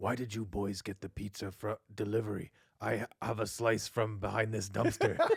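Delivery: low, slow, dragged-out cartoon rat voice. Joking about the cartoon, imitating Splinter: Splinter voice. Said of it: "in the cartoon he'd always be like".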